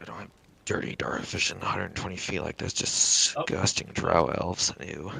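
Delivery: hushed muttered whisper. A player voicing their character, whispering to themself. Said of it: "I whisper to myself".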